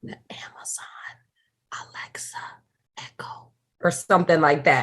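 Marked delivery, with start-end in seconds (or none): 0.0-3.5 hushed, secretive, all-breath whisper. Naming a must-have for the kids while Alexa is listening, whispering. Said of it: "I gotta whisper because she's listening".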